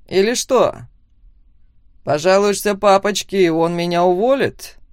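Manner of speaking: snide, sneering, mocking delivery. Robert answers Max, who has just told him to stay out of his business, snidely. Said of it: "Ехидно ответил Роберт".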